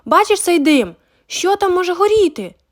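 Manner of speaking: shouting out, pitched high. A boy sees smoke from the kitchen window and calls to his brother, shouting. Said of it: "закричав він Гордону".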